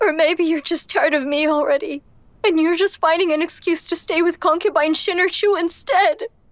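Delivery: weeping, tearful. Wanru, told by her husband to stop crying, answers him, crying. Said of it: "if you keep crying like this".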